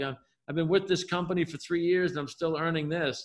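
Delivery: plain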